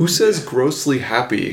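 ordinary talk, nothing marked

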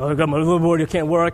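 ordinary talk

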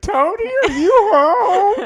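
mock shrill, high, terror-stricken calling out. Retelling how a woman called out to Tony, imitating a terrified call. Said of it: "I heard the terror in her voice".

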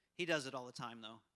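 usual speaking voice

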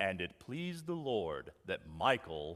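very low, hushed storybook voice-over narrator voice. Imagining a narrator commenting on his own responses, in a narrator's voice. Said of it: "with a narrator's voice above me saying".

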